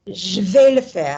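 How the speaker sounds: fed-up, furious, loud angry outburst. Saying a practice sentence when asked for anger: really angry, fed up. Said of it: "really angry, fed up".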